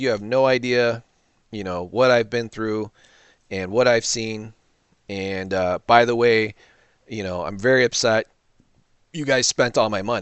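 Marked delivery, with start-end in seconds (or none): none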